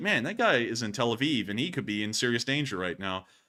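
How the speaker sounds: normal talking voice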